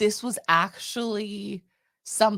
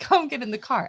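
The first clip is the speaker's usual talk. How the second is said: put-on loud yelling, calling out; 3 semitones higher than usual. Retelling calling friends to the car from the parking lot: imitating yelling at friends. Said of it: "yelling at them, going".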